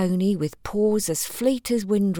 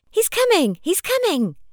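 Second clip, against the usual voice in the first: shrill, very high-pitched loud shouting; 11 semitones higher, 3 dB louder than usual. Susanna suddenly calls out to Princess Crystal, shouting. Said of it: "Susanna shouted".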